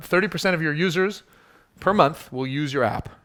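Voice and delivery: ordinary talk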